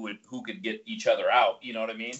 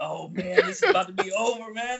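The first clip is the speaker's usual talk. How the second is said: play-acted, slow, drawn-out, high-pitched panicked dread; 9 semitones higher, 4 dB louder than usual. Retelling fearing trouble after impressing the t i: imitating own past panic. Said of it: "I'm just freaking out".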